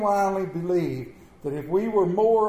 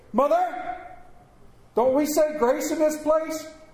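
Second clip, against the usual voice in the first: extremely loud, high-pitched calling out; 8 semitones higher than usual. Retelling 8-year-old Mary calling to her mother at a restaurant counter: Mary's extremely loud call. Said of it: "in an extremely loud voice".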